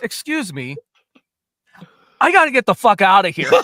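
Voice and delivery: very loud, ever-so-proper voice with swooping pitch. Retelling what Chris said when going up to somebody, imitating Chris, very proper. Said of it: "so proper".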